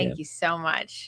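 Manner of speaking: sarcastic tone. Thanking someone in a sarcastic tone. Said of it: "that sounded sarcastic".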